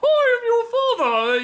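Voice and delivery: slowed, high British villain tone. Describing a casting idea, voicing a little Darth Vader with a British accent. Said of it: "with this British voice".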